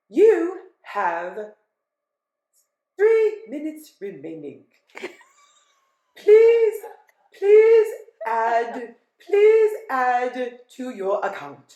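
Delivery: put-on Ghanaian-accented speech. Retelling a phone message warning that call time is running out: imitating a Ghanaian recorded voice. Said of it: "I heard this Ghanaian voice say".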